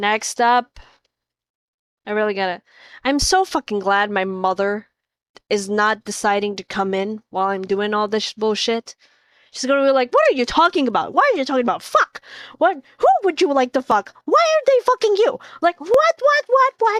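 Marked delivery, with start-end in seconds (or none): 10.1-17.0 put-on very high, swooping Filipino accent. Imitating their mother reacting to them talking, filipino mom accent. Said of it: "she's Filipino".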